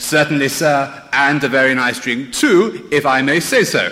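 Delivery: electronic robot voice with an English accent. Describing a robot's reply to a drink request, in an electronic English robot accent. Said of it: "in his best electronic English accent".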